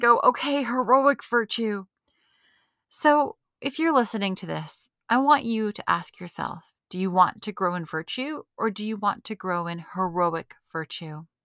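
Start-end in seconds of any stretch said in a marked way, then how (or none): 0.2-1.8 grudging, pitched up, through gritted teeth. Retelling her reply to her director's question, imitating gritted-teeth reply. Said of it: "through gritted teeth".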